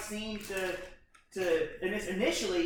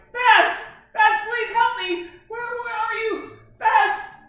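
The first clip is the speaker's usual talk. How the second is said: sobbing woman's voice, very high and very loud; 14 semitones higher, 12 dB louder than usual. Retelling a scene, the speaker voices the woman calling for baz: imitating a woman crying. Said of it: "this woman's crying".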